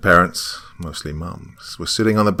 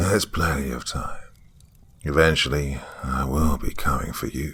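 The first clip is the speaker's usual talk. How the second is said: dry, rasping voice, lower pitch; 4 semitones lower, 4 dB quieter than usual. Reading a horror story, a clown-faced man speaks: dry, raspy voice. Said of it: "he said with a dry, raspy voice".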